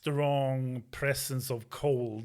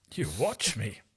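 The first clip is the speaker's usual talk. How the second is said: deep voice, dropped way down low; 3 semitones lower than usual. Voicing an Archon answering a player's taunt: deep Archon voice. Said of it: "Your voice is very deep today".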